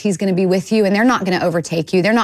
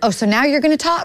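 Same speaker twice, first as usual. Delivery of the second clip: put-on sarcastic tone, pitched up; 7 semitones higher than usual. Retelling a reply to the Lord in the emergency room: imitating own sarcastic reply. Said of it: "I sarcastically said back to the Lord".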